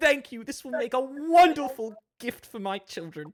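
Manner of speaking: put-on high, gushing, grateful, starstruck servant-girl voice.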